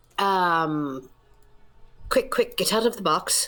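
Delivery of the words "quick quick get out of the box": homemade put-on British accent. Acting out a scene in the speaker's own take on a British accent. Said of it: "I believe this one was a British accent. or my interpretation thereof".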